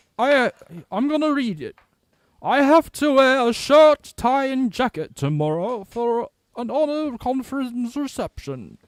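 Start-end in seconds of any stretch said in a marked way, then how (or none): 2.4-8.7 very high, loud, put-on upper-class posh accent. Reading a message aloud to the others, in a posh accent. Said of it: "That just sounded so posh".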